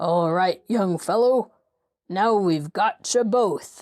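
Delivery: gruff, gruffly spoken voice. Reading a story, someone grabs the young fellow's shoulder, in a gruff voice. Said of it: "a gruff voice said in his ear".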